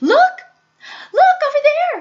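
shrill, very high, loud screaming. Narrator voicing a character pointing across the river, screaming. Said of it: "she screamed".

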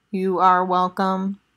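synthetic, electronic robot-like machine voice. Narrator reads the unseen voice answering Frank at his workbench: electronic voice. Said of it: "says the electronic voice".

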